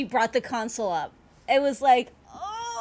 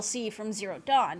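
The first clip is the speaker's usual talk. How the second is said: usual speaking voice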